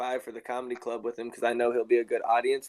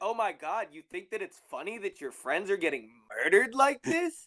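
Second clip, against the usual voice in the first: mocking, jeering, high, sing-song taunting; 7 semitones higher than usual. Taunting a laughing enemy in character after friends are killed: taunting. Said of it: "I just start taunting him".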